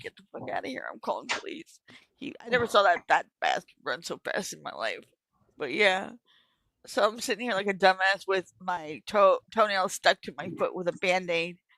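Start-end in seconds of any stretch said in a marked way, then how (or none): 0.0-1.8 put-on hushed whisper, through tears. Speaker recounts ordering an apologizing man out, retelling it while crying. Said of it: "I'm crying like a little bitch".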